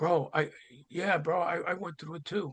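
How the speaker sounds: hushed, soft, under-the-breath, kept-down voice. Retelling what guys came up and said: imitating a hushed tone. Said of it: "said it in a hushed tone".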